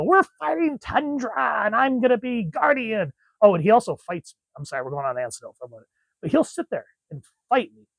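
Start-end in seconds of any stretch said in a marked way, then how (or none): 0.0-3.1 put-on high, slow kid voice. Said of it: "he'll go".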